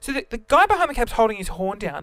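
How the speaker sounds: ordinary delivery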